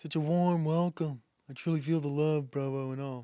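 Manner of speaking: mocking, put-on passive-aggressive voice. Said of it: "You come at me passive-aggressively".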